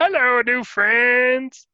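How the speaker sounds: high, loud, dim-witted voice. A player introduces his new D&D half-orc fighter, doing the Trog voice. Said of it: "And he talks like this".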